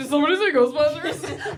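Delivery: goofy, bouncy voice, belted out high and loud.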